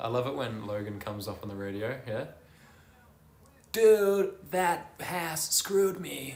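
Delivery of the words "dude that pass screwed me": bad American accent, high, very slow, drawn out. Imitating Logan on the radio: bad Logan impression, American accent. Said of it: "I can do like a full American accent ... That wasn't a very good impersonation".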